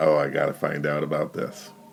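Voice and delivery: plain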